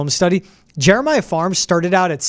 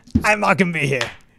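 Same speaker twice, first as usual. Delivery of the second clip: put-on coach voice with Cajun accent. Imitating a player leaving the team, in an Ed Orgeron voice. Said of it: "I don't know what kind of voice I'm".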